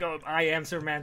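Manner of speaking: put-on robot voice. Discussing a scene where Superman meets Lois Lane, quoting him as robot-voiced Superman. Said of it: "I never read him in a robot voice".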